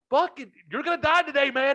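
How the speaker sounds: mock, shrill, very high screaming shout. Retelling how a neighbor yelled at a stuck driver: imitating the neighbor yelling. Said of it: "He's yelling at him".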